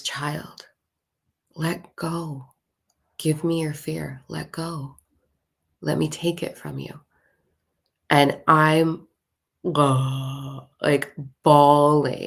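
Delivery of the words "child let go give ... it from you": low, deep-voiced half-whispering. Retelling the experience, the speaker voices the willow tree: retelling a tree's half-whisper. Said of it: "he whispers".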